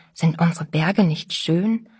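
plain reading voice

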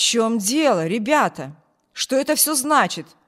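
loud, angry voice. Reading a man walking in on two brothers quarreling: loud, angry voice. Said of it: "раздался громкий, сердитый голос".

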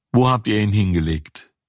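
usual speaking voice

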